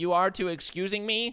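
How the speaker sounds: very high goblin voice with broken speech. A player tries to reason with a goblin, speaking goblin tongue. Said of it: "reason with it in goblin tongue".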